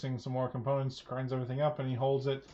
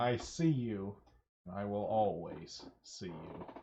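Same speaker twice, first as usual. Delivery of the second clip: deep, low voice, like an inner presence; 5 semitones lower, 3 dB quieter than usual. In the story, a voice speaks inside a character's mind: Orcus's voice in your head. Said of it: "you can hear [name]'s voice in your head. / He says, / you can hear [name]'s voice in your head".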